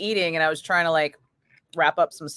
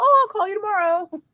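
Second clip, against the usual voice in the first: put-on very high-pitched sweet old lady voice. Quoting a woman the speaker talked with: sweet older woman voice. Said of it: "sounded like a sweet older woman. Possibly Filipino accent".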